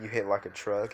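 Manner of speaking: usual speaking voice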